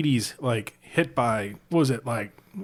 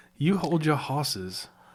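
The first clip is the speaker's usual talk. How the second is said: put-on sassy Southern belle voice and accent. Asking how a sassy southern belle would say the phrase, then trying it: sassy southern belle voice. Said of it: "like a sassy Southern belle?".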